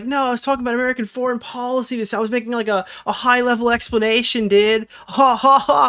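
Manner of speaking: high, sarcastic, derisive, mocking parody voice. Mocking how someone defends his words in an interview: mocking imitation of him. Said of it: "It's like".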